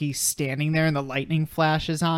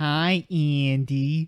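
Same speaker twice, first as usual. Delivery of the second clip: put-on Chicago accent. Retelling a movie plot, the speaker voices the doll greeting Andy in a Chicago accent. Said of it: "he says in his like Chicago accent".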